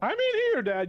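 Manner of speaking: very high, loud, gooey creature voice. A voice erupts from a character's body as everyone hears it: gooey voice. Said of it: "like gooey voice kind of like erupt".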